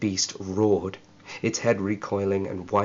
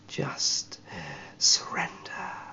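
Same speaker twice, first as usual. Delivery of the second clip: breathy, hissing reptile-like whisper; 2 semitones lower, 4 dB quieter than usual. Narrator reads a lizardman closing in on a fallen man, hissing lizard creature voice. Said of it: "it hissed".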